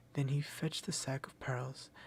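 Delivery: ordinary delivery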